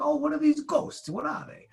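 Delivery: put-on heavy Bronx accent, very high pitched. Imitating a skeptical friend asking about ghosts: imitating a friend's heavy bronx accent. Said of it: "he's got this super big Bronx accent".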